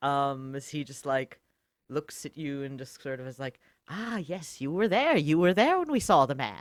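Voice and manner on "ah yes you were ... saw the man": high, loud, squeaky goblin-like creature voice. Describing Crunkle looking at the listener, then speaking as him in Crunkle goblin voice. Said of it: "in all of his little goblin-y, gremlin-y energy glory".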